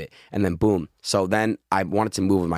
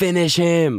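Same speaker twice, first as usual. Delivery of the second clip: play-acted, piercing, shrill, very high-pitched scream; 10 semitones higher, 5 dB louder than usual. Retelling playing a fighting game at three: imitating own childhood scream. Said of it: "and I would scream".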